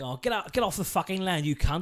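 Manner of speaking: put-on London Cockney accent. Comparing how the same threat would sound from a cockney, cockney accent. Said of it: "if you heard like a Cockney".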